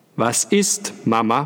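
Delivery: loud voice. A child asks his mother what is wrong, loudly. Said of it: "fragte er laut".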